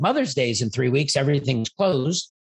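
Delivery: plain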